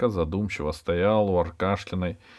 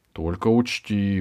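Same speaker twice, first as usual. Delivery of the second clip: ordinary delivery, nothing marked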